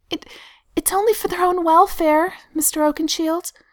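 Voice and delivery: nervous, uneasy. A woman answers a man roaring at her in front of children, nervously. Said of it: "she says nervously".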